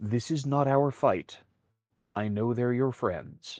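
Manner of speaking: quiet half-whisper, very close to the ear. Guiding Caleb out of the line of fire, she speaks into his ear, half-whispering. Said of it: "she whispers in your ear".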